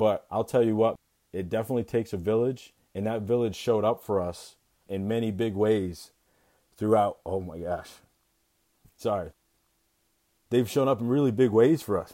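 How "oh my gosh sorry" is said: soft, choked-up emotional voice. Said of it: "I did not think I was gonna get like this".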